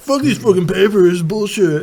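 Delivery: complaining in a lazy, slacker stoner voice. Imagining an intern clearing out old files, sounding like Otto from The Simpsons. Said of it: "Why did it sound like Otto from The Simpsons?".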